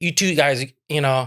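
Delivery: ordinary delivery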